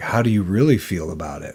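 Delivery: mock-sarcastic put-on voice. Retelling how a friend reacted to your excitement: mock-sarcastic, imitating Johan. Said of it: "Like he would sarcastically".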